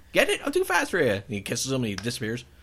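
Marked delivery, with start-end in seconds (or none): 0.1-1.1 very high-pitched, loud, squealing cartoon voice. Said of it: "He's like".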